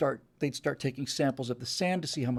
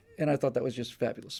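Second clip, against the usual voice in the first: ordinary talk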